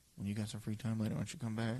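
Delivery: hushed whisper. Voicing a character who whispers an invitation that only one player hears, whispering. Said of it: "She kind of whispers like".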